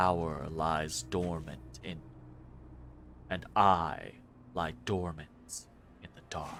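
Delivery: dense, stone-like voice, dropped very low and hushed. Voicing an elf who becomes blood crystal: voice growing lower and denser. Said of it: "The elf's voice becomes lower and lower, becomes denser and stronger".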